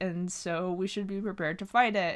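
ordinary delivery

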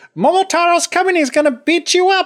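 bird voice, pitched very high. Retelling a folk tale, voicing the pheasant delivering a message: big bird voice. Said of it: "kind of like that big bird voice".

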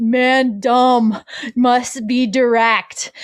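put-on caveman voice, speaking very slowly. Retelling how her husband jokes about their marriage counseling, in a caveman voice. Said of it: "he talks in a caveman voice and he goes".

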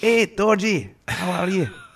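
drawn-out put-on Scottish accent, pitched very high. Joking about greeting a friend: put-on Scottish accent. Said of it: "I'm allowed to do Scottish".

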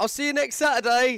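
very high, loud, carrying shout. Recounting leaving a packed Nando's, he acts out a man shouting across the restaurant. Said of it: "he shouted across the restaurant".

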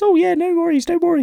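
very high, loud, tiny-headed man voice. Speaker telling a joke, voicing the tiny-headed man's reply in the tiny-headed man's voice. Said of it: "I'm not going to do that voice for the whole joke".

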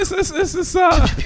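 voice pitching up nervously. Stammering an answer to a teasing question: voice pitching up nervously. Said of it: "why does my voice pitch when I wanna lie?".

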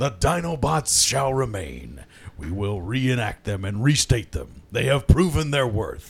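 very low, dropped-down, deep character voice. Imitating Prime deciding the Dinobots shall remain: Optimus Prime voice. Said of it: "Prime decides".

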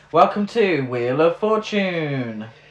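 loud TV game-show announcer voiceover voice. Correcting which announcer was meant: game show voiceover guy voice. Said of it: "the voiceover guy".

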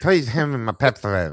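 mumbled as if marbles in mouth. Asking for the Pepsodent as a bit, talking with marbles in mouth. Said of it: "Might as well just eat a bunch of marbles".

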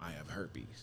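put-on voice, spoken low and hushed. Retelling what a partner confessed right before sex: imitating someone speaking low. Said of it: "you're talking so low".

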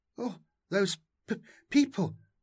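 stammering, stuttering, trembling with shock. Narrator reading a just-rescued woman's words, stammering, trembling with shock. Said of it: "Zany stammered, trembling with shock".

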